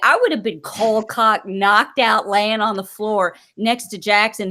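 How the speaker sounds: usual speaking voice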